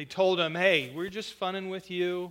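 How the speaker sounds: plain reading voice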